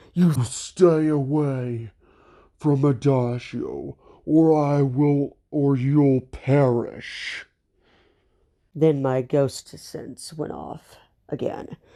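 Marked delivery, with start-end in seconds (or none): 0.1-7.4 slow, drawn-out demonic voice. Telling a story, the speaker warns someone away from adagio in a demonic voice. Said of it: "in my demonic voice".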